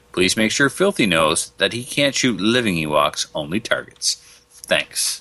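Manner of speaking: normal talking voice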